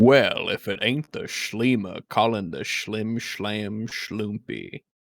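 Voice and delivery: low, deep character voice. Saying a line when asked for a best Cad Bane voice: Cad Bane voice. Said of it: "in your best Chad Bane voice".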